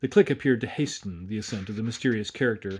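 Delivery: ordinary delivery, nothing marked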